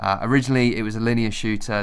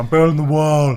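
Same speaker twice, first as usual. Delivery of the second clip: loud, slow, pitched-up proclaiming voice; 6 semitones higher, 7 dB louder than usual. Joking about Trump streaming Fortnite, the speaker does a Donald Trump impression. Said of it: "That was not a bad impression. sort of went a bit Schwarzenegger".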